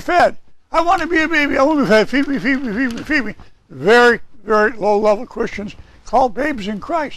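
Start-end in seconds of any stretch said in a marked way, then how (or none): 0.7-3.3 mock whining, higher pitch. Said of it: "Some people want to be whiners".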